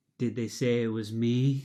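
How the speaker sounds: slow, drawn-out delivery. Retelling a TV segment about the clubhouse: imitating Carlos Gomez. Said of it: "it would cut to Carlos Gomez going".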